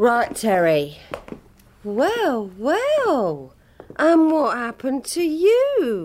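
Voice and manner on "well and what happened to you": sarcastic, much higher. Speaking to Terry after arriving with the boys, sarcastic. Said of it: "Is that meant to be sarcastic?".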